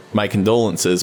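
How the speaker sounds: ordinary talk, nothing marked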